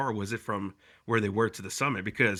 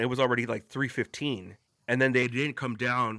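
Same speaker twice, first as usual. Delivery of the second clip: ordinary talk, nothing marked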